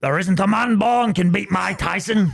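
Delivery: loud, high-pitched, belted declaiming voice. Asked to finally do it, doing a John Fury impression. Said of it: "What's your John Fury one?".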